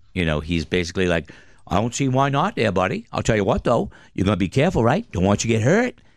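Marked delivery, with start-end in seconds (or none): 1.7-6.0 put-on heavy down-east Maine accent, laid on thick. Retelling a fishing-village guy's reply to a photo request, in the thickest Maine accent. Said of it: "in the thickest Maine accent".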